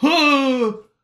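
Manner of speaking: high, loud dumb-guy grunt. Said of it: "and guys go".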